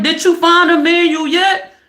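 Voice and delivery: mock exasperated frustration. Retelling a wife's question in a commercial: imitating a frustrated wife. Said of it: "The wife is frustrated".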